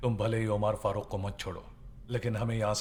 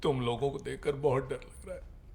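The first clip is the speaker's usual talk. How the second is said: weeping while talking, higher pitch; 5 semitones higher than usual. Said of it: "रो क्यों रहे हो?".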